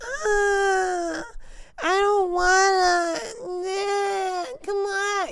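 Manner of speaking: put-on very high, slow, teary, child-like whining. Retelling how the students complained on a long hike: imitating complaining kids. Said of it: "literally like that".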